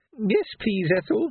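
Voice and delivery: tiny, high, frightened, quavering trembling voice. Reading a story, a customer in a crowd of armed men replies: tiny quavering frightened voice. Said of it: "quavered a tiny, frightened voice".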